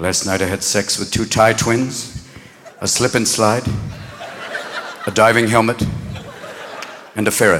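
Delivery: very low, hushed confessor voice.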